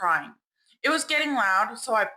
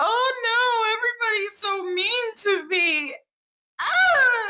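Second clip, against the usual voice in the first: very high, very slow, drawn-out put-on crying; 12 semitones higher, 3 dB louder than usual. Mocking an adult who cries for attention: mocking someone crying for attention. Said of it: "She's doing it for attention".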